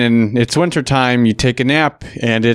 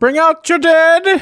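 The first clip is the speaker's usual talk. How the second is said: put-on old English town crier voice, higher; 3 dB louder than usual. Describing a gate guard at the leak: Monty Python old man voice. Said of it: "like, that old man from Monty Python".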